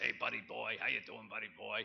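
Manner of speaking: rough, creaky cartoon sailor voice. Quoting a World War Two veteran's greeting, in a Popeye voice. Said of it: "had Popeye's voice, you know, kind of talked like this".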